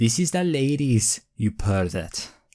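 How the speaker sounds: put-on Welsh accent, woman's voice. Acting out what a woman says to a man in the ladies' changing room, Welsh accent. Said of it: "Did I sound just like her?".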